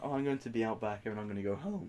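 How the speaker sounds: ordinary talk, nothing marked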